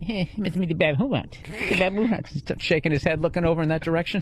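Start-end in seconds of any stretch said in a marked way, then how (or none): 0.0-2.3 complaining whine, pitched way up high. Whining in a high-pitched voice as Leno, throwing it to the band member. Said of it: "just whining in a high, a high pitched fucking voice".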